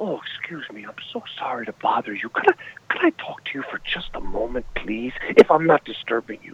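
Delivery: very low and quiet-spoken. Retelling how Roddy Piper came over to you when you had never met, in a real low voice. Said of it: "he's like in a real low voice like".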